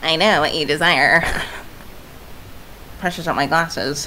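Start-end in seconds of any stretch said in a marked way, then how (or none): 0.0-1.2 put-on Valley Girl voice. Voicing a male character until seeing him, in a Valley Girl voice. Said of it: "give him a Valley Girl voice".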